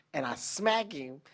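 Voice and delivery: plain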